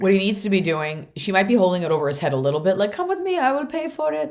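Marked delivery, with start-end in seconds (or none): 2.9-4.3 very high-pitched put-on Persian accent. Voicing a mother who holds money over her son, imitating a Persian accent. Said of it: "I don't know why she sounds Persian".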